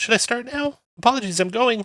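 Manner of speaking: squeaky, very high, jittery, nervous little imp voice. A game narrator voices a small imp calling out from a dark chamber, high-pitched nervous imp voice. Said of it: "A high-pitched, nervous voice calls out".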